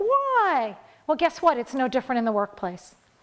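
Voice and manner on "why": whiny, high complaining voice with drawn-out "why". Describing how they ask why: mock-whiny why. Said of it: "they do it in a really whiny voice".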